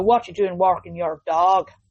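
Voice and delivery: sudden slip into put-on Irish accent. Imagining winding down the van window at a dog owner, in an irish accent. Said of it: "I don't know why I've gone Irish on it".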